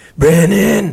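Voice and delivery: raspy smoker voice. Retelling how a friend's mom called him, imitating her smoker voice. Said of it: "and she'd be like".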